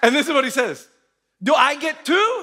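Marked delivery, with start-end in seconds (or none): 1.4-2.4 put-on aggrieved, angry, high, drawn-out delivery. Retelling a staff member's reaction to everyone getting shoes: imitating Albie angry. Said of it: "He was angry".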